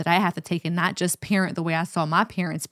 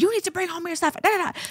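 mock, high, scolding yelling and screaming; 12 semitones higher than usual. Retelling yelling at a confused child about homework: imitating own past yelling. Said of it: "I was yelling and screaming at him like".

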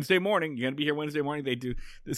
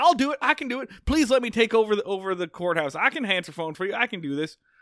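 mock, eager pleading, begging tone, pitched up; 7 semitones higher, 4 dB louder than usual. Retelling a show where a character begs to take over the courthouse: mock desperate begging. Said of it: "he begs".

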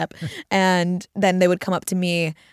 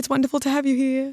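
put-on, fake, high-pitched British accent; 8 semitones higher than usual. Retelling suddenly slipping into a British voice when greeting someone: high-pitched British accent. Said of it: "And high-pitched".

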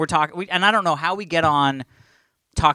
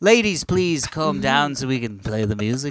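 put-on convincing Liverpool accent; 3 semitones lower than usual. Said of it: "A pretty good accent".

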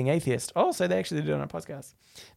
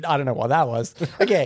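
usual speaking voice

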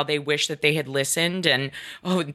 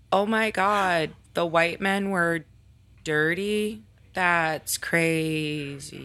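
really shocked tone, faked and crazily drawn out. Reacting to a finding about who doesn't wash their hands, in a fake shocked tone. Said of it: "let me put on a really shocked tone".

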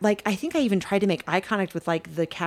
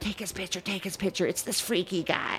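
soft, hushed whisper kept under the breath; 7 dB quieter than usual. Retelling what was said to an eighteen-year-old daughter: imitating own whisper. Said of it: "I'm whispering to my eighteen-year-old daughter".

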